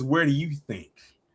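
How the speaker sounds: seductive, sultry, come-hither delivery. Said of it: "she said it so seductively".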